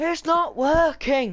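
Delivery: high, loud, slow, drawn-out desperate yell. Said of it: "and he goes".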